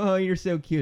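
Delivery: put-on very high, cutesy boyish voice. Retelling what people say about the speaker's red hair, in a cute boy voice. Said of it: "you said it in a cute boy voice".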